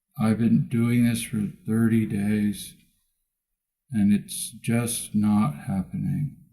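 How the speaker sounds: play-acted listless, apathetic, very hushed low tone. Speaker mimics a man's voice back to him to show how he sounds, mimicking his apathetic tone. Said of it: "I mimicked his tone of voice".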